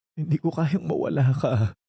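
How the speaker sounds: speaking through tears. In a drama, Sally answers Jerry after he asks why she is crying, crying while talking. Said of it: "bakit ka umiiyak?".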